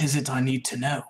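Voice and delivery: put-on British accent. Playing a character in a tabletop game: british accent. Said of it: "don't make fun of my British accent".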